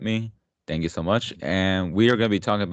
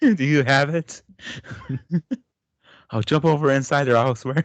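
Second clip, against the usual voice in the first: high, worked-up, mild half-screaming; 7 semitones higher, 3 dB louder than usual. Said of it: "just start screaming".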